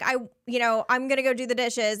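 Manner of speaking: put-on frustrated woman voice. Retelling a movie scene about chores: imitating a frustrated woman. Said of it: "frustrated and she's like".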